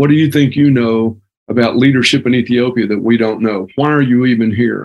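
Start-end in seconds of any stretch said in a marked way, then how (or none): none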